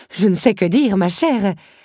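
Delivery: stammering. The countess addressing Belle, stammering. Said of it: "bredouilla la comtesse".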